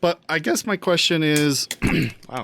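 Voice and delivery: voice cracks mid-sentence, jumping suddenly high. Starting to ask a question, voice cracking. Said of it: "my voice just cracked".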